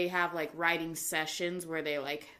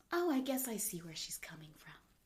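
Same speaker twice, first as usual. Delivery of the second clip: put-on soft, sing-song, grudging middle-aged woman, barely convinced; 9 dB quieter than usual.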